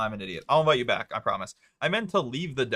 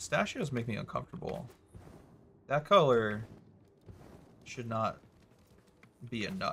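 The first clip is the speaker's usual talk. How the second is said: muffled words pushed through a full mouth; 6 dB quieter than usual. Talking while eating pistachios, with mouth full. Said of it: "mouth is full".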